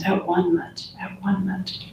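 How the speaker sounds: soft, barely audible, repeated whisper. Showing listeners how to quietly affirm a word: whispering. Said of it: "maybe whispering this word a few times".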